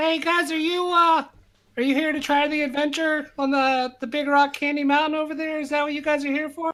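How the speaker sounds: tiny, very high little elf voice. Storyteller voicing a small elf calling a group of guys over, little elf voice. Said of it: "you just hear this little voice go".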